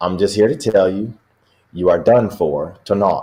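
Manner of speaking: put-on English accent. Retelling what Vince said to another man, Vince in an English accent. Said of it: "with an English accent".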